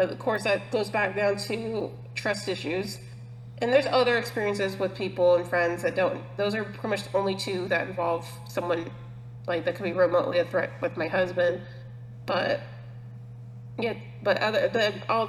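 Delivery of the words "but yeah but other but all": stuttering, stumbling and restarting over words. Speaker talking about friends who hurt her, catching on her words, stuttering. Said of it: "sorry, I'm stuttering".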